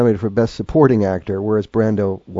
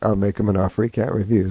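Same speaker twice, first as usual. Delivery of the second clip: plain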